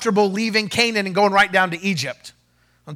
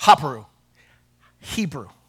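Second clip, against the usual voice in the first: quicker, faster, very deep, low voice; 7 semitones lower than usual. Explaining where the word Hebrew comes from, repeating it: a little faster. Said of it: "let me say it a little faster".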